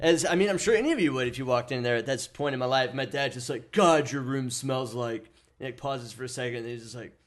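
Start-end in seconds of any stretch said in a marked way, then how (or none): 3.7-5.3 put-on angry, pissed-off voice. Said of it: "we have this voice for my dad that we always do".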